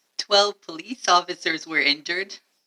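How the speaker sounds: very loud, high, put-upon whining.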